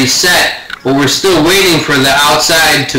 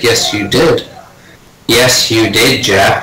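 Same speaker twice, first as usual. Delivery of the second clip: put-on calm narrator voice, lower pitched; 4 semitones lower than usual. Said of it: "was it like a Morgan Freeman voice?".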